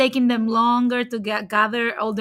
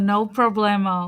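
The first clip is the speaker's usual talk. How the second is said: put-on American accent; 2 semitones lower than usual. Saying a phrase the way a gringo would, american gringo accent. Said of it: "Like a gringo, ... I'm saying it like an actual gringo".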